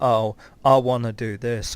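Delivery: ordinary delivery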